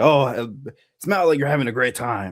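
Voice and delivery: put-on gruff alien warrior voice. Retelling a line said at a meet and greet: Zeb voice. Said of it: "he did the Zeb voice for me".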